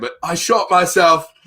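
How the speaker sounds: put-on accidental British accent. Retelling what a guy said after he shot himself, accidental british accent. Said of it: "I'm going to do a British accent on accident".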